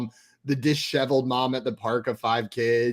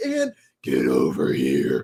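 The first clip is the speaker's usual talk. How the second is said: very deep voice, swooping down to the bottom; 11 semitones lower than usual. Retelling what a man suddenly said, in a deep Scorpion voice. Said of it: "the deep voice that he went down into".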